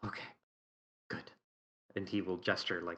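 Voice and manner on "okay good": quiet, mildly exasperated, resigned near-whisper. Voicing a character reacting to the others on a hike: quiet, slightly exasperated sigh. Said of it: "very quiet but slightly exasperated sigh".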